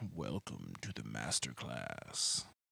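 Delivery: voice dropped an octave or two.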